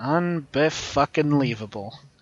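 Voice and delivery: quiet grumbling mumble under the breath. Voicing a character who turns away holding a drink: muttering to himself. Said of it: "he just mutters to himself".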